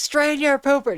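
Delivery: shrill, very high-pitched acted yelling and screaming. Retelling how a deaf woman who can't hear herself talks: imitating someone screaming. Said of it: "screaming it".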